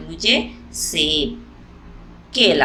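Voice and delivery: brief pause following सेब. Explaining where a comma falls in a list: short pause after सेब. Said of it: "तो हम यहाँ पर कुछ समय के लिए रुक रहे हैं सेब के पास".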